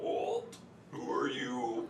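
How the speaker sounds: put-on creature voice. A game master voices a bullywug who spots a sneaking player character: bullywug voice. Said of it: "That's awesome".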